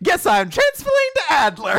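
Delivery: cheerful, exclaiming, shouted high.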